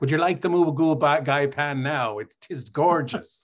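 put-on thick Irish accent. Retelling a waiter in Galway coming to the table, thick Irish brogue. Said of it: "with the full Irish brogue".

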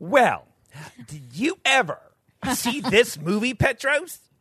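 impassioned, passionate, very high-pitched voice. Imitating Jeremy asking a co-host about a movie: imitating Jeremy, passionate. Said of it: "Jeremy's like".

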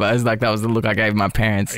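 ordinary talk

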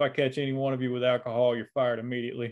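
ordinary delivery

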